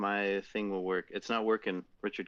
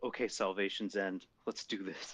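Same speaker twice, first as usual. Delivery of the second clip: hushed, whispered murmur under the breath; 4 dB quieter than usual. Player starting up the ship's systems before heading to orbit, whispering to self. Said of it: "I whisper to myself".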